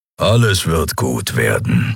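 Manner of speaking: grumbling. Keru answers Nelen, who asked to be lied to this once; grumbled. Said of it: "brummte Keru".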